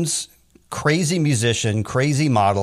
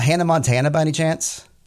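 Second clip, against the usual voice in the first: ordinary delivery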